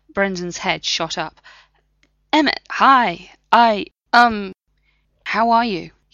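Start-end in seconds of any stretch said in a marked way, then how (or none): 2.3-5.8 hesitant, embarrassed, sheepish voice, spoken very slowly. Narrator reads a man greeting someone who confronts him, sheepish and nervous. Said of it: "He asked sheepishly, looking nervous".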